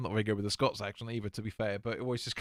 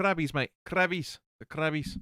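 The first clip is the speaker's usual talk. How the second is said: accent from Scotland; 5 semitones higher than usual. Asked about today's beer, the speaker answers John in a Scottish accent. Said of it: "I keep doing Scots".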